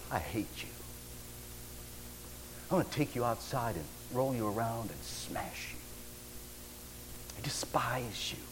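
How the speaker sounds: mock whispered, contemptuous, menacing tone. Speaker recalls a man who swaggered up after the professor left, mock-disdainful. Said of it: "with disdain in his voice and his face".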